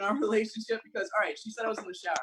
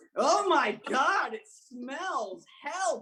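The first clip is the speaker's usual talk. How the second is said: put-on grossed-out hollering cry, high and loud; 7 semitones higher, 5 dB louder than usual. Returning to a comedy bit about a woman, retelling her yelling. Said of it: "she's yelling".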